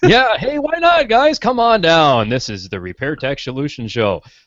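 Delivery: very high, swooping, hyped-up game-show announcer voice. Asked by a co-host to keep the announcer voice for a plug; announcer voice. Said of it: "keep the announcer voice".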